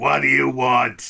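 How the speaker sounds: very loud, gruff, rough little tough-guy voice. Voicing a little dude with a cigar who answers a knock: little cigar-smoking dude. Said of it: "this little dude sitting there. He's like".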